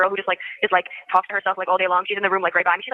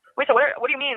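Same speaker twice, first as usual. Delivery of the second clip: uneasy, worried, nervous, anxious tone; 5 semitones higher than usual. Asking on a phone call what the news means: nervous. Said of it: "I'm just really nervous".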